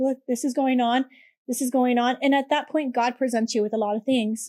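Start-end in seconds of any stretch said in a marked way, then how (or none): 0.0-2.2 acted crying, tearful tone. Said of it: "And I was crying".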